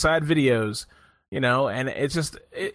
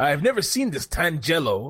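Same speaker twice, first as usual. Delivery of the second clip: put-on Polish accent, mocking and taunting. Repeating another speaker's line to mock it, in a mocking polish accent. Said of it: "Sound like a fucking Polish guy trying to".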